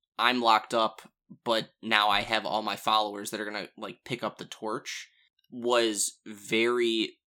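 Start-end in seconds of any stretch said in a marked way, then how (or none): none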